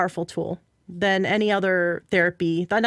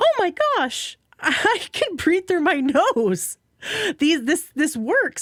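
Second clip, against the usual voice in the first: mock very high, swooping, drawn-out excited yelp; 10 semitones higher than usual. Retelling a friend's surprise at breathing freely: imitating an excited yelp. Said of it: "she just yelps".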